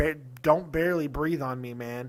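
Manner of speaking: normal talking voice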